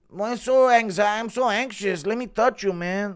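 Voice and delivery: very high, predatory fighter voice, like stalking prey. Speaker acts out Pico hunting down a wounded opponent: Pico impression. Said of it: "Impression of Pico".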